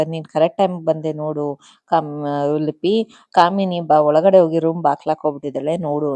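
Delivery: plain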